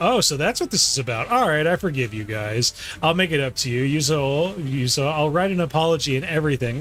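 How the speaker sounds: ordinary talk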